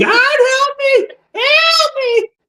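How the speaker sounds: put-on, shrill, very high-pitched screaming woman voice. Describing a haunt visitor sprinting through, imitating the screaming woman. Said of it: "and screaming".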